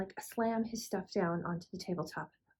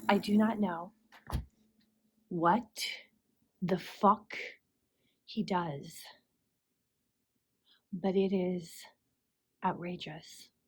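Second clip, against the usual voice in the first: voice quivering with anger; 2 semitones lower than usual. Speaker complaining about a man who broke two refrigerators, shaking with rage. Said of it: "I am practically shaking with rage".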